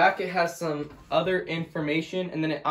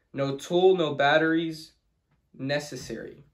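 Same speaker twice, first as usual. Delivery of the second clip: plain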